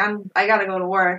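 usual speaking voice

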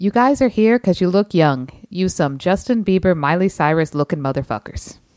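play-acted, dead-straight, dry delivery with no reaction. Sharing a favorite movie quote from a ranked list, quoting a line deadpan. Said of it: "here's my deadpan quote".

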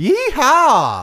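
put-on high, loud yeehaw holler in a country accent. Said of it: "Did I do a country accent?".

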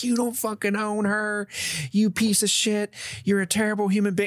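high, screaming tirade. Telling how a woman three rows behind in class started at them, retelling a woman screaming. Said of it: "she starts just screaming at me like".

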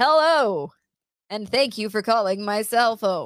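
put-on loud radio DJ announcer voice. Telling a partner how they first answered the phone, radio DJ host voice. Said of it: "why do you sound like a radio DJ host?".

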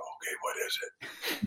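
very quiet, hushed, very slow whisper. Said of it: "I'll whisper back".

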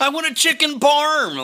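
put-on loud, drawn-out kid's hollering yell. Describing eating fast food in the car while driving, imitating kids yelling. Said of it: "your kids are yelling".

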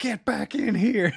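very high, shrill, loud frantic scream. Telling a story, acting out how Lewis screamed at her, retelling Lewis screaming. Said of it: "Lewis is screaming at her".

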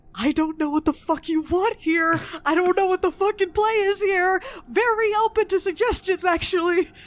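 whispering in panic. Voicing a character whispering into a pendant, whispering in panic. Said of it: "I whisper into my pendant".

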